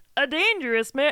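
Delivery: high, loud, cartoon-style puppet voice. Retrying an impression after a first attempt went wrong, Jordan Peterson impression. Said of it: "That was a different Muppet altogether".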